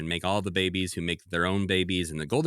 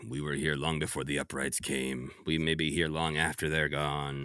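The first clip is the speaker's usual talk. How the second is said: put-on old person's voice, lower and quieter; 4 semitones lower, 4 dB quieter than usual. Retelling what an old crocodile elder says to comfort him: Doctor Claw-like voice. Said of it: "he's an elder with a Doctor Claw-like voice".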